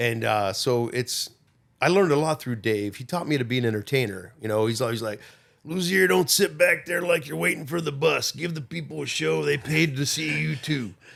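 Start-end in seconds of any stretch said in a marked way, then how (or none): 5.7-10.9 rough-edged, creaky voice. Quoting a bandmate's advice about performing, imitating Dave's voice. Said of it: "it's hard to quote him and not talk like that".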